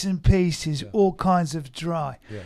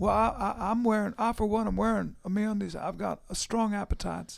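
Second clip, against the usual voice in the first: put-on old Southern politician voice, higher and quieter; 3 semitones higher, 7 dB quieter than usual. Doing an ad read as Bill Clinton: older Bill Clinton impression. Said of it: "sounds like an older Bill Clinton".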